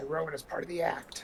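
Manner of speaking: slow, in-character stage-whispered aside. Playing a character who tells another character something: whispering in character. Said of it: "I'm gonna whisper".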